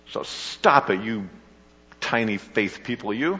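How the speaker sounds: reproachful, accusing, scolding tone. Asking listeners to picture a line said this way: mock-accusing tone. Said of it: "do you picture him saying it with an accusing voice?".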